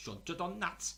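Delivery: put-on high-pitched Yorkshire accent.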